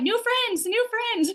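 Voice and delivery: very high, bursting, eager excited puppy voice. Explaining pursuers and withdrawers, the speaker voices a puppy meeting a turtle, excited puppy voice. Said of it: "so excited".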